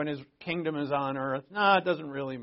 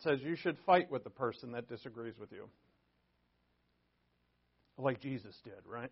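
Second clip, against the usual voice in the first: mocking, ironic, sarcastic delivery; 3 semitones lower, 6 dB quieter than usual. Claiming a verse supports fighting people who disagree: sarcastic. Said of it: "I'm being sarcastic".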